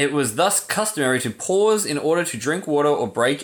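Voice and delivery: ordinary talk, nothing marked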